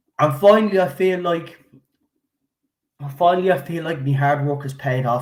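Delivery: emotional, heartfelt, deeply moved voice. Thanking everyone after three years of hard work, getting emotional. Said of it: "I'm sorry for getting emotional here now".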